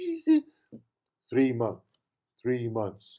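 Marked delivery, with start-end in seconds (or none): 1.3-3.2 flat deadpan tone, lower and quieter. Retelling a stranger's answer about her baby's age: imitating a deadpan reply. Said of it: "Like this deadpan look".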